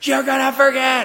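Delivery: high, loud, screaming voice.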